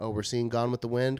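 ordinary talk, nothing marked

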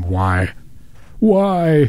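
acted-out screaming cry. Describing how he screams at night and gets woken, acting out a scream. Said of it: "I just scream".

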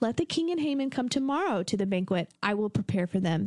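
put-on sweet, innocent voice. Reading Esther's lines aloud in character, sweet, innocent Esther voice. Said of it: "my Esther voice. All sweet and innocent".

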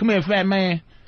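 put-on rural country accent, laid on thick. Retelling how inmates called out across the yard: imitating a country accent. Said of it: "they were like country".

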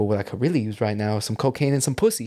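put-on voice with a slight lisp. Retelling a documentary interview about a record release party: Russell Simmons voice with a lisp. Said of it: "like, Russell Simmons voice".

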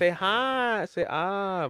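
very high, very slow, drawn-out "hi". Retelling how he says the line: imitating a high-pitched voice. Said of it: "he says it, like, high-pitched".

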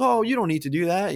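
small-town Southern lawman drawl. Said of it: "they all have Southern accents".

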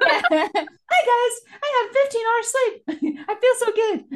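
very high, very loud, stretched-out, drawn-out voice. Imitating a friend bragging about fifteen hours of sleep: imitating Jojo's voice. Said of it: "And I usually said it in that voice".

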